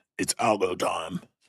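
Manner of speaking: bad British accent sliding into Australian. Saying the line the way Kane would say it, in a botched British accent. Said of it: "It sounds Australian".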